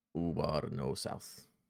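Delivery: broken, simple pidgin speech in giant voice. Voicing Ubar answering a request to go south: Ubar speaking broken Giant. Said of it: "broken, well, you know, way".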